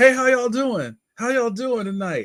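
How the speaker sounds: very high, mock overeager, excited shop-clerk voice. Retelling how a video store clerk greeted customers: imitating an excited clerk. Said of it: "He's so excited".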